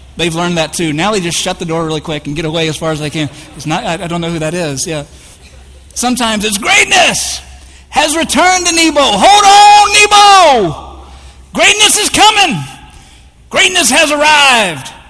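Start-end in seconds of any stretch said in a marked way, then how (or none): 6.6-14.9 very loud, high, slow, drawn-out corny preacher voice.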